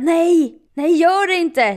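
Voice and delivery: play-acted, very slow, loud, high, stretched-out shriek. Retelling how Louise reacted at the reception desk, imitating Louise screaming. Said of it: "Skrek så här".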